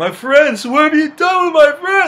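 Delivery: screaming and crying, high, loud and anguished.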